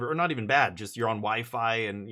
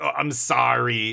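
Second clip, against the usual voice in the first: put-on American accent, louder; 6 dB louder than usual. Retelling how his wife teased him by mimicking his apology: American accent. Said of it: "You've got like an American accent".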